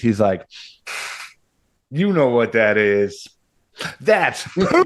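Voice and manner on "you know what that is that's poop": mock, dry, sarcastic, know-it-all kid voice. A father retells his son's answer, imitating it mock-sarcastic. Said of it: "Like this sarcastic".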